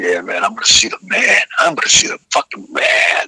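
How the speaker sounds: put-on eager, excited, lit-up little-kid chatter. Retelling Lou's reply to the speaker's question, imitating Lou talking like a kid. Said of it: "this so was talking like a kid".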